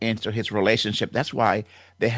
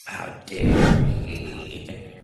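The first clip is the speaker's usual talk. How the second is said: evil, sinister, creaky demonic-sounding voice; 5 semitones lower than usual. A commentator voicing people who condemned a husband, in a sinister demonic voice. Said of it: "sinister voices, almost demonic in nature".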